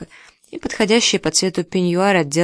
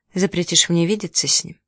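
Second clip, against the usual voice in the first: ordinary delivery, nothing marked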